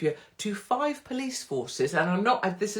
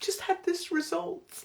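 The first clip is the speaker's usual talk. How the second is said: acted crying voice, pitched way up, sobbing wail; 11 semitones higher, 4 dB quieter than usual. Mocking people who film themselves crying into the camera, mock crying.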